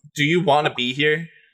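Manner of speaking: heavy, dripping, pointed sarcasm. Asking another player's character a question in the game: loud and sarcastic. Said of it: "But loudly and sarcastically".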